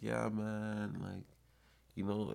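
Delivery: sluggish, drawn-out speech. Speaker recalls a once fast-talking man who now talked way slower, imitating slow, dragging talk. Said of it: "he was talking way slower".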